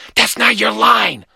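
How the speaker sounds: seething, angry, furious hiss. Reading Glenn as Philip grins at the crowd: hissed. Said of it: "Glenn hissed".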